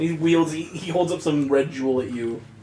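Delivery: plain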